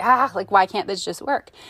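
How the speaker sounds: plain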